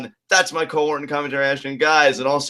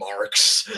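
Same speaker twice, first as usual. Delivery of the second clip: put-on disdainful, venomous sneer, lower and quieter; 6 semitones lower, 4 dB quieter than usual. Imitating how the other speaker wanted to sneer at critics: imitating disdain and venom. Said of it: "with all this disdain and venom".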